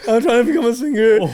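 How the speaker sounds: put-on bawling, tearful pleading. Retelling a fan crying after the show: imitating someone bawling. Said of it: "bawling his eyes out".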